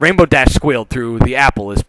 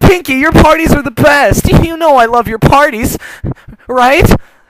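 very high, loud, desperate blurting; 6 dB louder than usual. Narrator reading the story, Rainbow Dash speaking to Pinky: desperate Rainbow Dash voice. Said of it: "[name] got picked to go find Pinkie".

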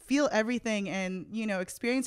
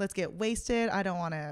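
usual speaking voice

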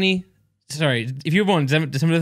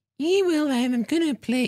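high-pitched put-on Scouse accent. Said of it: "Do, do Scouse".

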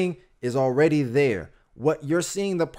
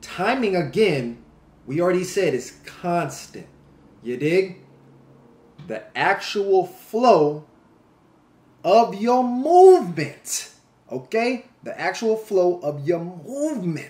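very slow, deliberate, drawn out, each word spaced; 3 semitones higher, 3 dB louder than usual. Teaching about timing and movement, the speaker delivers the point very slowly. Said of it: "I want to make sure that I say this as slow as possible".

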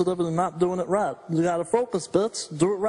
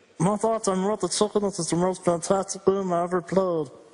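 ordinary talk

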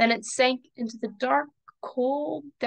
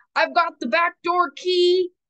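loud, high-pitched yelling; 6 semitones higher, 4 dB louder than usual. Magnus calls out to the others on the horse, yelling. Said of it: "Magnus yelled".

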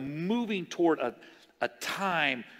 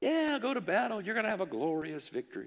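mock heavy sarcasm, meaning the opposite; 4 semitones higher, 5 dB quieter than usual. Retelling a prophet's answer to the king: acting out a sarcastic reply. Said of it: "he tells the king sarcastically".

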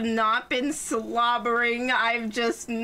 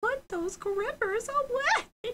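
put-on screaming character voice, pitched higher; 14 semitones higher, 3 dB quieter than usual. Retelling a Sonic video clip: imitating Amy screaming. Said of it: "Amy's just, like, screaming".

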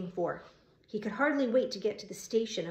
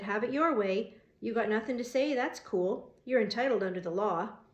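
plain

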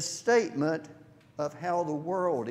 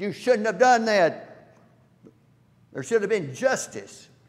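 loud, angry, indignant outburst; 4 semitones higher, 7 dB louder than usual. Retelling a seminarian's objection to a bishop: imitating an angry young man. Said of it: "he was very angry at him".

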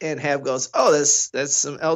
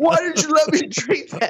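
put-on, very high-pitched, near-tears freaking-out outburst; 12 semitones higher than usual. Retelling freaking out after drinking from a bottle: imitating own panicked outburst. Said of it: "I start freaking out, like, on the verge of tears".

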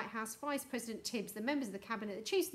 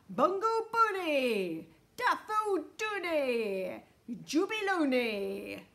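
loud, very slow, all-out forceful cry; 4 semitones higher, 6 dB louder than usual. Mr. Wonka calls out again, putting all his force into it; forceful voice. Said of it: "He put so much force into his voice".

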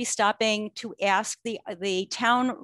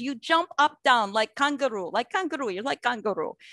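put-on Polish accent. Retelling what a man said to the speaker, in his Polish accent. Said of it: "he says to me in his Polish accent".

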